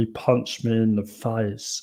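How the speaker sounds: low, flat, boring monotone, slow and lifeless. Redoing the line more boring: Harry Kane impression. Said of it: "that's my Harry Kane impression".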